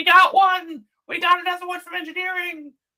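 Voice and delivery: very high, loud, shrieking scream. Describing advisors reacting to the speaker's request for help, imitating a Ghostbusters scream. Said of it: "screaming like Ghostbusters".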